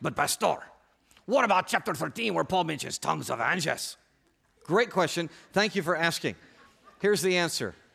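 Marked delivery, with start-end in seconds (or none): 0.0-4.0 terrible put-on Spanish accent. Voicing the listeners' unspoken question to the pastor: terrible spanish accent. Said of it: "terrible Spanish accent".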